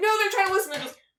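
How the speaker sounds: high, frantic voice. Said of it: "And you're just like".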